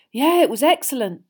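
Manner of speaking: breathless, barely voiced. Answering a girl who asks if he has finished with the dish, breathless. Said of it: "said Ron breathlessly".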